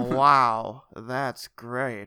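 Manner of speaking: put-on Southern American accent, drawn-out "wow". Showing off a southern accent on a quoted line, put-on southern accent. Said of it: "That's my southern accent".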